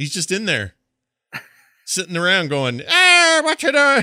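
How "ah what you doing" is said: put-on loud, high, shouted Irish accent. Imitating a game character who keeps showing up in dreams: imitating Sean's Irish accent. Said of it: "his accent gets in my head".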